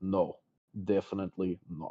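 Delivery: utterly serious, grave, low no-joke delivery. Voicing a character who refuses a suggestion: much more serious tone. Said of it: "in a tone that is much more serious than you've ever known him to be".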